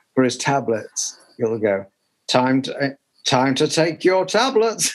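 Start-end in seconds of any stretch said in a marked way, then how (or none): 3.3-5.0 plain, recorded-sounding voice. Retelling what the dad's phone alarm says, imitating the dad's voice. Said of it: "it's like his own voice".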